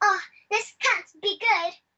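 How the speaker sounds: put-on high British accent. Retelling a film scene where the dog speaks: Vanessa British accent. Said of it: "in her British accent".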